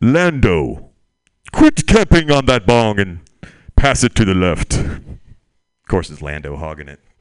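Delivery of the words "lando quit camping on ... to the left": booming, very loud, breathing hard. Doing a stand-up impression of a character smoking weed: Darth Vader smoking weed.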